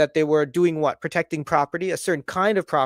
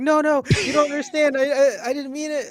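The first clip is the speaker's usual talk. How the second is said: mock, very high, weepy, tearful voice; 10 semitones higher than usual. Acting out an imagined apology to a surprise guest: mock crying while pleading. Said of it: "I would be crying, actually".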